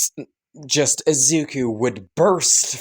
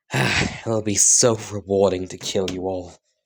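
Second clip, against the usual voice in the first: said with a sigh, lower pitch; 5 semitones lower than usual. Voicing Izuku as he faces his parents: sighing while speaking. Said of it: "he would sigh and say".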